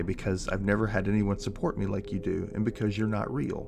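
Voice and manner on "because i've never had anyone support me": usual speaking voice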